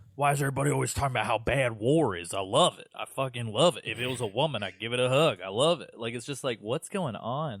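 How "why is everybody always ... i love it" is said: put-on southern drawl. Imitating a game villain's southern voice: Sundowner's southern voice. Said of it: "southern affectation in the voice".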